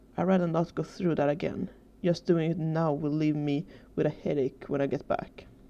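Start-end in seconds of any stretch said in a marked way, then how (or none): none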